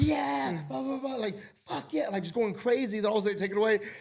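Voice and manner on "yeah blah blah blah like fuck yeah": put-on scream, higher. Retelling how a football fan reacted to a goal: imitating a fan screaming. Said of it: "she's screaming".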